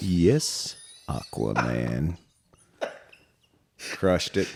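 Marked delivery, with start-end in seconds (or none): 1.1-2.2 slow, dramatic narrator voice. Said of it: "the Dateline voice".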